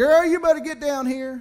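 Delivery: put-on very high, shrill screaming. Retelling a man screaming in the background of a phone call: imitating someone screaming. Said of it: "he starts screaming in the back".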